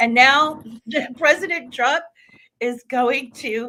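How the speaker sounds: words breaking up with laughter. Commentator discussing a political case against a candidate, laughing while talking. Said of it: "I'm sorry, I'm laughing".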